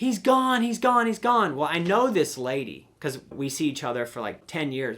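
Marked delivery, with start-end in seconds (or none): 0.0-1.6 very high, loud, shrieking scream. Retelling a lady at her horse trailer calling for help: imitating someone screaming. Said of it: "She's screaming".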